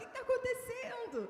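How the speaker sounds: high, startled, alarmed call.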